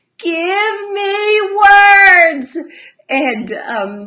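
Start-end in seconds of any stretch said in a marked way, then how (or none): 0.2-2.6 sobbing, crying yell, very high and loud. Retelling a little girl's outburst: imitating crying and yelling. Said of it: "she's crying this and yelling this".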